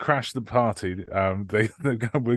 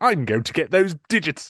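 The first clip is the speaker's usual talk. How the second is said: put-on English accent, pitched up; 5 semitones higher than usual. Describing a scene in which Groove speaks: Groove's put-on English accent. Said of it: "puts on like an English accent and just goes".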